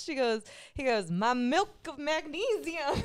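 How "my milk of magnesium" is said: very slow, drawn-out southern drawl. Retelling what a guy on a bike said to the speaker, in a southern accent. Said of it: "he says in a southern accent".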